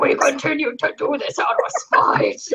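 stiff, furious, robotic machine voice. Mimicking a co-host's earlier remark back at her, as an angry robot. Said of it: "You turned into like a really angry robot".

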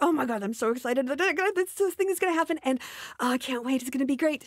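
excited gush, words tumbling out, drawn-out "this". Explaining how excited people sound, acting out mock-excited, words bursting out. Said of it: "the words are bursting forth from them in an excitement".

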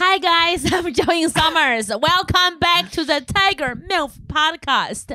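very high, shrieked full-voice scream. A podcast host opens the show greeting listeners: screaming. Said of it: "I am screaming because that's who I am".

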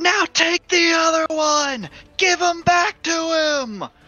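loud shouting. During the fight as the orcs back away, yelling out to the others. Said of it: "I yell out".

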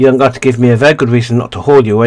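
growled, menacing, rushed out fast. Told she never gets receipts, he answers her, growling. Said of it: "he growls".

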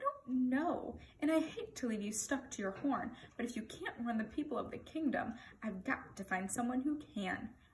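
plain reading voice

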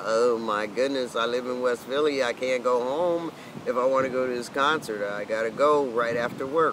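ordinary delivery

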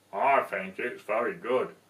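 deep, low talking-puppet voice. After reading the story, the reader answers as the Gruffalo: Gruffalo puppet voice. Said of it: "Isn't he clever? He can speak".

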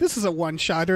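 ordinary delivery

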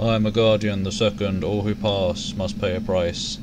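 low, flat, droning monotone voice. Narrating a scene, a shade guardian speaks to you in a low, droning voice. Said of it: "It starts to speak in a low, droning voice".

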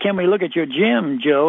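ordinary delivery

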